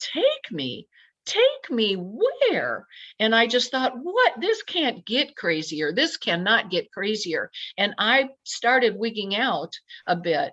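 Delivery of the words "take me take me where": mock slow, swooping, high, drawn-out cry. Recounting shouting back at a male voice, retelling a yell. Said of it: "And I spoke out and yelled".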